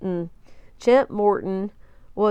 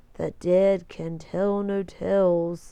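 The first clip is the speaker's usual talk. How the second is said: slow, eerie ghost voice, "tales" drawn out; 2 semitones lower than usual. After playing a tape several times, Chet imitates the eerie voice on it. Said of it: "Chet tried to imitate the eerie voice".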